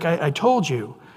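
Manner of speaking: mock-upset tone. Retelling God's reply to Abraham, mock-upset. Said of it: "it seemed to really upset God, and he's like".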